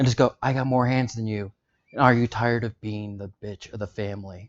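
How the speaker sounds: hushed low whisper. A character speaks to another in Basic: low whisper. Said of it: "I'm saying this in basic in a low whisper".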